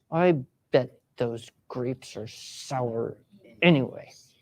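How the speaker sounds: annoyed, put-out, low, slow irritated grumble. Voice exercise, repeating the grapes line in an irritated voice. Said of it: "let's try it with an irritated voice".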